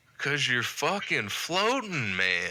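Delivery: put-on acted tipsy voice. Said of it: "half drunk".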